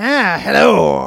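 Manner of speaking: loud, put-on cartoon skeleton voice. Trying out what his skeleton voice might sound like, skeleton voice. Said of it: "My skeleton voice might be something like this".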